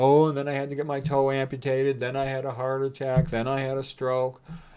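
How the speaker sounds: mock self-pitying, complaining tone. Imitating aging people telling friends their health troubles: imitating a sob story. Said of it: "They have all these sob stories".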